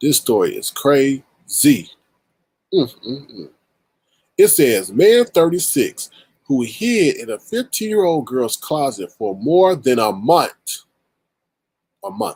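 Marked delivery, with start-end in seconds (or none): 10.0-10.8 brief slip into Jamaican pronunciation. Reading a news story aloud, slipping into a Jamaican accent. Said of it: "That's my Jamaican side coming out".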